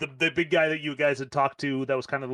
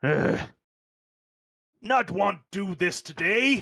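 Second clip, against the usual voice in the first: put-on high, slow, sulky teen voice; 6 semitones higher than usual. Voicing a teenage female frost giant who comes up to speak: teenage frost giant voice. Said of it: "female frost giant, basically a teenager".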